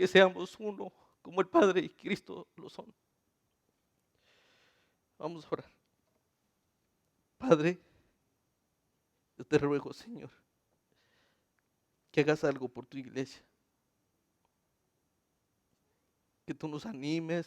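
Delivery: tearful, crying while speaking. Addressing the church brothers and leading them in prayer, crying while speaking. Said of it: "estoy llorando porque desearía".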